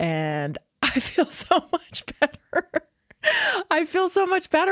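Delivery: laughing while talking. Telling listeners the products work again after days back on them: laughing while talking. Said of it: "I'm laughing because".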